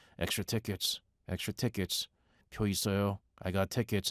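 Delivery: quiet, hushed, low-key calling voice. Retelling how scalpers offered tickets at games: imitating scalpers calling quietly. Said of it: "kinda quietly going".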